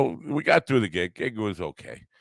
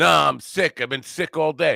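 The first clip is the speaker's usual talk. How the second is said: boisterous, loud, high blurted outburst; 8 semitones higher than usual. Speaker retelling a man's answer in a crowded restaurant, retelling a loud blurt. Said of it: "he blurts out in a loud voice".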